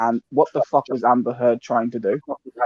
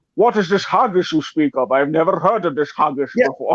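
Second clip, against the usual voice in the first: put-on Scottish accent, higher; 5 semitones higher than usual. Quoting a Highlander line about haggis: Sean Connery impression. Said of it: "That just sounds like Sean Connery".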